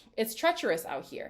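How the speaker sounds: plain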